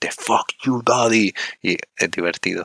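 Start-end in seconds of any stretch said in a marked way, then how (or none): 0.1-1.3 loud shouting, hurled out. Describing a match where a performer yells at the audience: retelling a shout at the crowd. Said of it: "le empieza a gritar a la gente".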